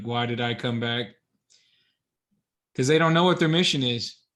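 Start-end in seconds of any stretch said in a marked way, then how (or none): none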